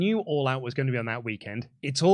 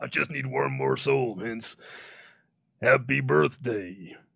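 deep, rough, creaky drawl, wrestler voice; 4 semitones lower than usual. Asked to say happy birthday in character, you do it in The Undertaker voice. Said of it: "Can I have [name] say happy birthday as The Undertaker?".

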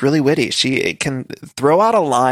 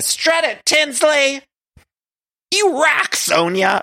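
mock very high cheering yell, full-lung shrieking; 13 semitones higher than usual. Retelling how Ramona behaves at a fashion show, imitating Ramona shouting at the top of her lungs. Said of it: "shouting at the top of her lungs".

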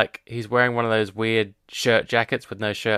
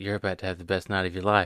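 mock creepy tone, lower and quieter; 3 semitones lower, 5 dB quieter than usual. Retelling a movie scene where he locks her in a bedroom: imitating a creepy voice. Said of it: "And then he goes all creepy".

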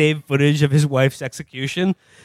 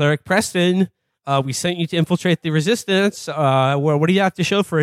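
plain

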